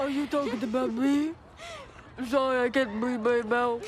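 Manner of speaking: mock mouth-breathing kid voice. Imitating a band kid who can't breathe through his nose: imitating a stuffy-mouthed band kid. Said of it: "that's what he sounds like".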